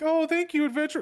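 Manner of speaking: put-on very high, loud girly voice. Retelling how a girl's voice lines sounded, imitating a girl's voice. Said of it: "it went from like girl".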